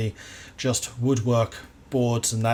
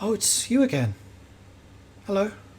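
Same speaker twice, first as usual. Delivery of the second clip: put-on very high, youthful, teenage-sounding voice; 9 semitones higher than usual. A voice calls out from the shadows as you walk past; speak in a quiet voice. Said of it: "quiet voice calls out from the shadows".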